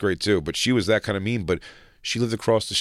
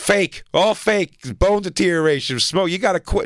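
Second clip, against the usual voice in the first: mock, drawn-out, very high-pitched scolding yell; 10 semitones higher, 4 dB louder than usual. Retelling a lady scolding the speaker about smoking: imitating someone yelling. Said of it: "She kept yelling at me about smoking".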